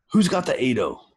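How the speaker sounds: put-on acted-out, high-pitched child's shout. Retelling how a kid called out at the dictionary table: imitating a kid shouting. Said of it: "he shouts out".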